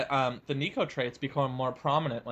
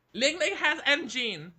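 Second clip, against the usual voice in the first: squeaky, very high-pitched put-on character voice; 12 semitones higher than usual. Asked by the other speaker to try the line again: Rum Chata Forever voice. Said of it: "give it a shot at the Rum Chata Forever voice".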